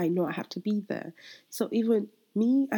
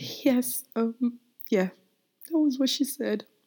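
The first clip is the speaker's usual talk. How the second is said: tearful, pitched-up crying voice; 6 semitones higher than usual. Telling how their daughter prayed over a joking remark, the speaker goes on crying. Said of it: "I'm sorry, I'm crying".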